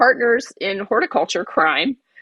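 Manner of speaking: normal talking voice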